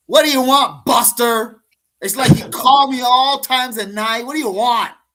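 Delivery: very high, very loud, shrill, irritated yell. Imitating a sister answering the phone: imitating an annoyed phone answer. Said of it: "give it the old".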